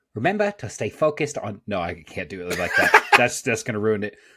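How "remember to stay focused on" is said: pitched-up, put-on Australian accent. Asked for a quote, a speaker delivers it in an attempted aussie accent. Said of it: "in my best Aussie accent".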